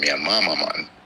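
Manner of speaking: plain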